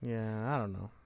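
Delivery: downcast, dispirited, sounding down. Reacting to news that another speaker calls exciting, sounding down. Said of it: "Why do you sound so down?".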